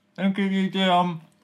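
high, words pushed through a full mouth. Thanking a listener of the podcast, mouth full of nuts. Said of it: "with nuts in my mouth".

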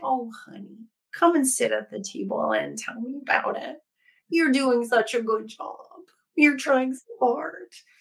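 tender, sweet, loving grandmother voice. Contrasting a ruthless football coach, doing a put-on loving granny voice. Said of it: "a really loving granny voice".

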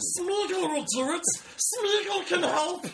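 very high, top-of-the-lungs, full-lung yell. Retelling standing up in your section, shouting as Smeagol. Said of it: "I'm shouting at the top of my lungs".

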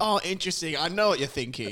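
high, sarcastic, ironically open-minded musing. Mocking another speaker's reaction: mock open-minded tone. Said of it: "Just being really open-minded".

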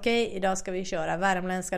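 plain

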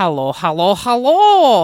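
loud put-on generic European accent, hello drawn out. Host opening the podcast episode: generic European accent. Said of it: "trying to introduce this podcast in generic european accent".

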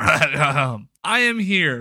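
awkward, wooden, stiff, "I" drawn out. Restarting the episode with the usual opening line: unnatural delivery. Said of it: "That didn't sound natural".

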